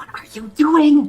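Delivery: whispering. Voicing a character who asks a player's character what they're doing: whispering. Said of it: "whispering to you".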